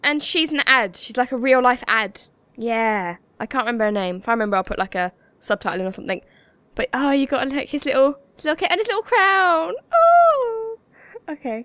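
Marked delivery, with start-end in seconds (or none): 6.9-11.7 excited, high, swooping, rising gushing fan voice. Looking at a character's kit and crown in the game: getting all excited. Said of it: "I'm getting all excited again".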